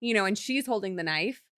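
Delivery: ordinary talk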